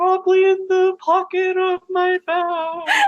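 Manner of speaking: thin, very high, ghostly voice. A game master voices a ghost answering a player's question, in a ghostly voice. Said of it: "You hear a ghostly voice say".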